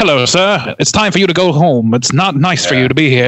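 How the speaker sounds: forties cinema mid-Atlantic accent. Doing an impression of an old-film character telling a guest it is time to leave, in an old movie mid-atlantic accent. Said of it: "trying to do like a mid mid Atlantic accent".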